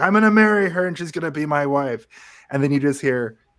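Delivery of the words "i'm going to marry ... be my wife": play-acted, high, frantic, frenzied outburst. A movie fan quotes the best line in the film, imitating Bowser freaking out. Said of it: "when Bowser is freaking out".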